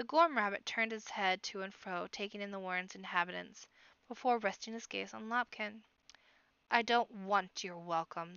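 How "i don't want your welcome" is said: low, resonant echoing voice. Narrator reads the armored Gorm rabbit addressing Lopkin, deep echoing voice. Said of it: "the deep voice echoed inside the iron shell".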